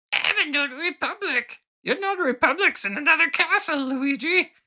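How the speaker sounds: very high-pitched, badly done squeaky voice. Riffing on a notary joke with Luigi, doing a horrible Toad voice. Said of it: "horrible Toad voices".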